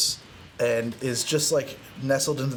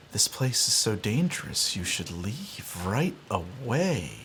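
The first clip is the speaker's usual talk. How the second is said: very sweet half-whisper, "away" drawn out; 4 semitones lower, 3 dB quieter than usual. Game narrator voicing a half-whispering voice the players suddenly hear: sweet half-whispering voice. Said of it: "as sweetly as you could imagine".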